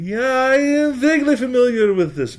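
put-on very high-pitched, slow, drawn-out little old man accent. Retelling what an old man in a chair answered: imitating the old man's accent.

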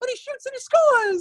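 very high-pitched, loud Brooklyn play-by-play voice. Recalling his childhood play-by-play tapes, imitating his younger self; high-pitched Brooklyn accent. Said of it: "my high-pitched Brooklyn accent".

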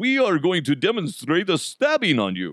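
high, swooping vampire voice like a puppet. Act out a man presenting his stab-proof vest to a reporter, in the Count from Sesame Street voice. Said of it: "he sounds like the Count from Sesame Street".

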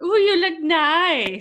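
doubtful put-on Russian accent, stretched, high and loud. Trying out a voice for a line from a video, in an attempted Russian accent. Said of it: "I don't know if that sounds Russian at all".

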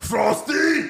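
loud, high-pitched yell.

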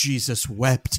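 put-on dramatic, exclaiming delivery. Retelling what a co-host said about bad audio: imitating a dramatic exclamation. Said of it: "he would look deeply into my eyes and go".

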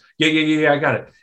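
hasty, rushed string of quick rattled-off words. Retelling a player cutting off the coach's instructions: imitating rushed agreeing. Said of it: "the guy's like".

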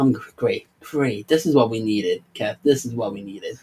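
soft, heavily laid-on sarcasm. Talking to Kev about something being back, really sarcastic. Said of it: "I'm being really sarcastic right now".

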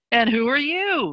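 light, playful, sing-song lilt. Retelling turning to the left to ask who had joined: lilt in the voice. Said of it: "literally a lilt in my voice".

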